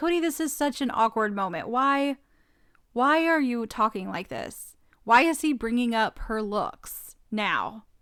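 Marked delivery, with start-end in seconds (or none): none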